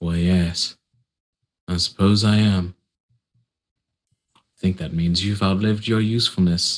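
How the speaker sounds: surprisingly smooth delivery with no edge. Voicing the masked figure holding a pistol: surprisingly smooth voice. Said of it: "the voice comes through surprisingly smooth".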